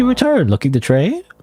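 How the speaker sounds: weird, silly, very high goofy put-on voice. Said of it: "giving the weird, goofy voice".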